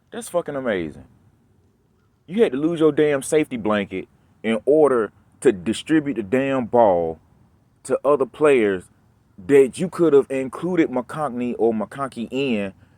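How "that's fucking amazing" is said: plainly sarcastic delivery. Complaining that the passing playbook only opened up after an injury: sarcastic. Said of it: "I'm saying it sarcastically".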